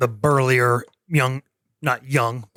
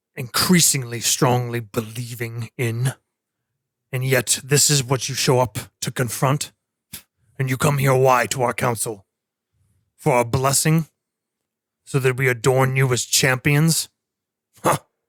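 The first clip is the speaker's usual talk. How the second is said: put-on gruff elderly man's voice. Storyteller voicing a council elder questioning the visitors, gruff elder voice. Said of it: "The gruff bearded man kind of nods slightly in, / uh, the the burlier young, not young, but for this gr- group, the younger of the two men, um, in his uh, probably in his fifties, / "You help us defea".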